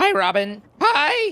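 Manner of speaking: cracked, very high-pitched voice cracking up. Greeting someone while talking through gameplay, voice cracking. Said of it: "Made my voice crack".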